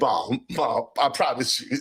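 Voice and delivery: slow, earnest, begging pleading tone. Retelling answering mom who caught them reading: imitating own past pleading. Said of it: "And I was like".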